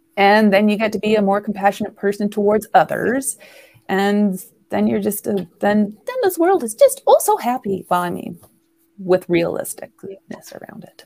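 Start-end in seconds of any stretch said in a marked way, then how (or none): 6.1-7.9 high-pitched voice, pitched higher. Wrapping up a point about compassion, then saying the last line in a high voice. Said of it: "that was a high voice".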